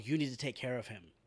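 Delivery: sly, coaxing, manipulative half-whisper, like a stage whisper. Retelling how Lori urges Rick to act: imitating Lori half-whispering. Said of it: "She starts just whispering in his ear".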